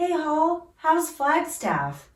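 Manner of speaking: put-on mimicked respectful child voice. Imitating a polite neighbor kid greeting the speaker: imitating a polite kid's voice. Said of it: "literally in that voice".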